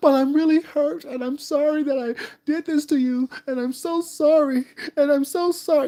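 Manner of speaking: play-acted, high, weepy, tear-soaked crying. Retelling a past live stream with D Ramsey, imitating D Ramsey crying. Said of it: "stop all that goddamn crying".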